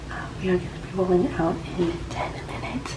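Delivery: quiet whisper.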